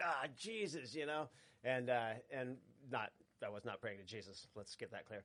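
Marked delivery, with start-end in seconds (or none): 0.0-0.9 put-on, light, high-pitched cry. Retelling yelling out when the car was nearly dead: retelling own yell. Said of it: "just yelled that out".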